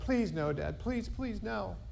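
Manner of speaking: high, begging, pleading voice. Telling a joke, the speaker voices a son begging his dad; retelling a son's pleading. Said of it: "The son pleads with his dad".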